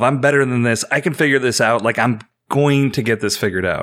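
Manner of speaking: ordinary talk, nothing marked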